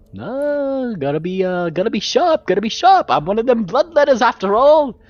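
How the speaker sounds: the word "no" drawn out, swinging high. Voicing a bat-pony bloodletter character, sounding like Yogi Bear. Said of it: "he started sounding like Yogi Bear".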